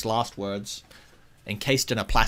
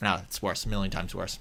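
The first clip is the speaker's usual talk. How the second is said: plain reading voice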